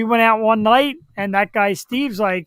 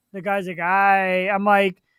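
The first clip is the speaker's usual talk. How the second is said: ordinary delivery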